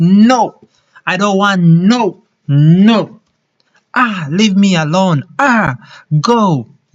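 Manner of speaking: put-on irritated delivery. A speaker demonstrates the energy behind refusing someone; acting annoyed. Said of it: "you'll be like".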